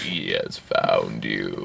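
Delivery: very low, creaky voice, dragged out. Joking about a film character drooping lower: imitating Will Smith's monotone voice. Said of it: "he still talks that monotone voice".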